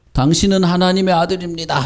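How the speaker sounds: put-on demon yell. Telling children how Jesus silenced demons, imitating a demon shouting. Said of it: "소리 지르면".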